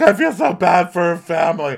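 over-loud, fake crying and sobbing. Retelling a cast member's line, imitating faux sobbing. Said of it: "faux sobbing".

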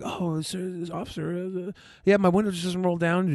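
put-on calm, polite, sweet little-boy voice. Recounting talking to a scared officer at the car window, in little calm boy voice. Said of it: "Using my little calm boy voice".

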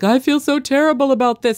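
high, loud, sloppy mock drunk voice.

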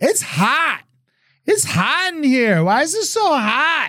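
put-on very high, shrill, loud, annoying girl voice. Retelling a party story, the speaker imitates a girl there: loud annoying girl voice. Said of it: "really like annoying voice girl that was so loud".

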